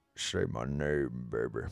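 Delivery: very low, slow, drawn-out, fake seductive voice. After reading out names, saying a line in a fake sexy voice. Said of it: "in my fake sexy voice".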